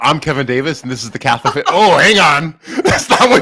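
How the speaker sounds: solemn papal balcony proclamation voice. Picturing the other speaker on the papal balcony: imitating the other speaker as Pope. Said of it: "come out on the papal balcony and go".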